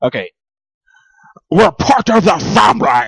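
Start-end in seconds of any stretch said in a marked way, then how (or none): 1.5-3.1 put-on slow, raised, drawn-out English accent. Doing an impression for friends to compare: Jeremy Irons impression. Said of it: "And that was Jeremy Irons".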